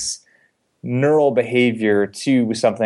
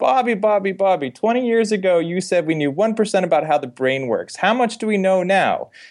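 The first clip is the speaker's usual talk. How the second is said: put-on New Jersey accent, pitched up; 9 semitones higher than usual. Retelling an aunt's follow-up question at a later family reunion, in a New Jersey accent. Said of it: "I'm framing a New Jersey accent".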